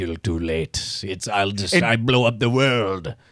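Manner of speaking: put-on very low, vague Russian villain accent. Speaker acts out a mad bomber in a vaguely Russian accent. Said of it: "a vaguely Russian accent".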